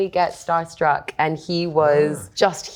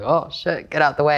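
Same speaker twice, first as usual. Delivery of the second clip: frightened, alarmed exclamation; 3 semitones lower than usual. Retelling a co-star's reaction to her screaming spells: imitating Ralph Ineson scared. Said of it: "I scared the big Yorkshire man".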